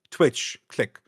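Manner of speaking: ordinary talk, nothing marked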